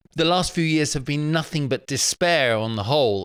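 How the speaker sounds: plain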